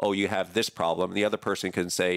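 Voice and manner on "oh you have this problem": ordinary talk, nothing marked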